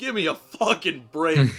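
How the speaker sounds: exasperated shouting. Retelling reacting to a bad movie love story; retelling an exasperated yell. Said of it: "I was like yelling".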